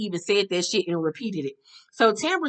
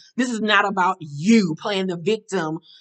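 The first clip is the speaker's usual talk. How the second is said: usual speaking voice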